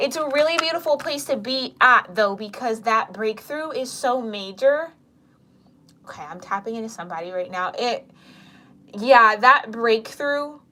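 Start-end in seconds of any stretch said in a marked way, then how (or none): 0.0-4.9 teary voice, on the verge of crying. Reading a message to listeners about a breakthrough, close to tears. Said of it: "it's making me kinda wanna cry".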